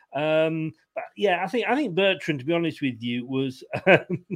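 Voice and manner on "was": laughing partway through speech. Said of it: "sorry, I'm laughing".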